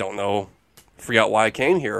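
soft, creepy, awkward delivery. Imitating a scene from a trailer: Robert Durst impression. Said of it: "impression of Durst by you".

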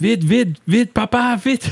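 put-on very high, frantic, panicked child's shriek. Father retelling his child running to him at night: imitating panicked screaming. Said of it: "Il paniquait, il broyait, il criait".

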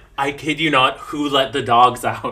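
ordinary talk, nothing marked

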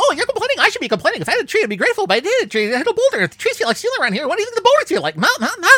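very high, rapid, stammering, self-repeating rush. Giving an example of a typical line from the character Blur, in a fast stuttering Blur voice. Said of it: "he talks very fast and tends to stutter and repeat himself".

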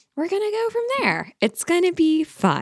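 unsure, slight rising lift at end on fun. Promising listeners an episode of answered questions: slightly questioning rise. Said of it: "with a little question mark in her voice".

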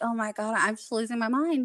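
ordinary talk

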